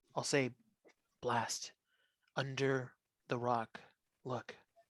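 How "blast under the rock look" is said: very hushed, quiet stage whisper. Calling out in character to blast about the rock: loud whisper. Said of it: "whisper, but loud".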